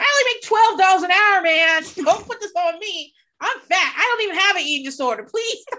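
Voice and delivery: high screaming, yelling rant. Retelling a phone call, re-enacting their past self, retelling screaming at the phone. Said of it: "I'm like screaming at the phone".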